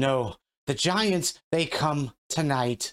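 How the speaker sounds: calling out loudly in the giant tongue. The loudest female giant, in the center of the group, yells out again. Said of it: "yells out again in giant".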